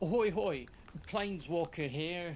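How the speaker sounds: a failed attempt at an Australian accent. Attempting to speak as his clone, failing at an attempted Australian accent. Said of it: "I can't do the accent".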